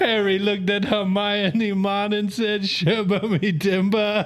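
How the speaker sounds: put-on Jamaican accent. Joking about reading a Harry Potter audiobook aloud, in a Jamaican accent. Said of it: "start an audiobook for Harry Potter in that accent".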